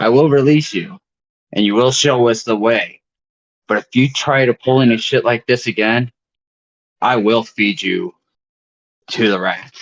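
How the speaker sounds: menacing, threatening, intimidating voice. Holding a light to a captive's face in character: intimidating threat. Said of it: "an intimidation check with advantage".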